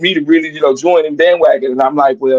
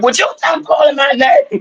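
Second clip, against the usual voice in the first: play-acted very high, upset, yelling outcry; 11 semitones higher than usual. Retelling how an upset Isaac snapped back at him, imitating Isaac yelling. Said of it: "he was yelling".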